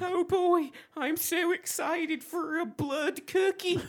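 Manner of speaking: put-on young child's voice. Playing the kid, sent into the cupboard, in a kid voice. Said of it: "I'll be the kid".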